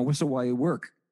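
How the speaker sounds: ordinary talk, nothing marked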